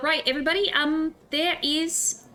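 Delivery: put-on, high-pitched stable boy accent. Addressing a crowd in character, talking in a stable boy accent. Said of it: "I'm talking in the stable boy accent".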